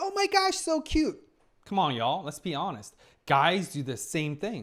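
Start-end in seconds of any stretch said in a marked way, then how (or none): 0.0-1.2 very high-pitched, cute-animal voice. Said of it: "Goes up a tone, a pitch".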